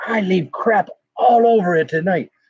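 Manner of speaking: put-on British narrator accent. Retelling what a man in a video said, in a british accent. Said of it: "He's got a British accent".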